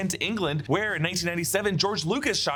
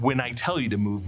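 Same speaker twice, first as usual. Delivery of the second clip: usual speaking voice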